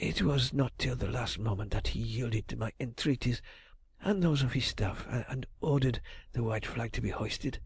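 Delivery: low, hushed, husky voice. Reading a story aloud, a trembling envoy hands over a reply: low husky voice. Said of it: "in a low, husky voice".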